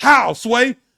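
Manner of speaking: very loud, high, hard yell. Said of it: "I'm yelling at [name]".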